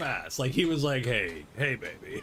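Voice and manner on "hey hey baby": play-acted low, sultry, seductive voice. Retelling how he suddenly got sultry with them, mock-sultry come-on. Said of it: "He got all sultry on me".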